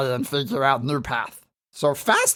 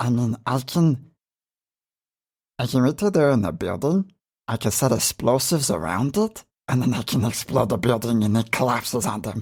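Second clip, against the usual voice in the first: whispered put-on character voice; 5 semitones lower than usual. Voicing Ranji in a shared story as the group enters a building, whispering in Ranji voice. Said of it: "in as much of a whisper as I can do in a Ranji voice".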